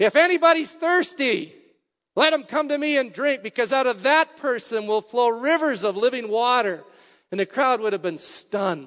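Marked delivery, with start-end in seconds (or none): 0.0-6.8 loud, high voice calling out broadly. Retelling Jesus calling out to a silent crowd, in a loud voice. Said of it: "in a loud voice".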